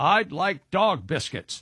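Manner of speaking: put-on slow, proud, confident four-year-old enthusiasm. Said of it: "with all the enthusiasm of a very confident four-year-old".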